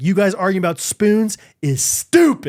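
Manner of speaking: slow, heated, fired-up, emphatic scolding tone. Retelling scolding the kids about the spoons later: retelling own fired-up scolding. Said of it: "I was still fired up".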